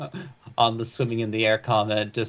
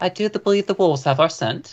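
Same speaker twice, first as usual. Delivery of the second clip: put-on, higher-pitched female character voice; 7 semitones higher than usual. Voicing a character responding about the wolves, in the woman's voice. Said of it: "and in the woman's voice responds".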